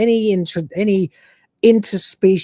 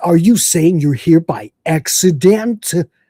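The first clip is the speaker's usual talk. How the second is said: exaggerated, over-the-top fake American accent; 4 dB louder than usual. Retelling what he said, in an over-the-top American accent. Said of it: "like when a British person does an American accent and it's way too over the top".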